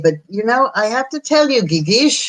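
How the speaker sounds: put-on lovely French accent, pitched slightly up. Quoting father's words of support: imitating father's french accent. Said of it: "with his wonderful French accent".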